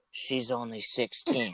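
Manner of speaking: hushed whispered aside. Retelling a buddy whispering next to the speaker: imitating a whisper. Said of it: "a whisper next to me and just whispers".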